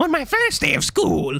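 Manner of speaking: very high, put-on cartoon voice. Rereading a line just read aloud, now in Doofenshmirtz voice. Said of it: "you need Doofenshmirtz's voice".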